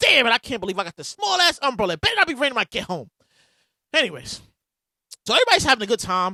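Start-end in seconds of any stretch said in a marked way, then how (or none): 0.0-3.1 angry, cursing, fuming complaint muttered to oneself. Retelling being stuck under a tent in the rain, retelling being mad. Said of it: "mad as shit".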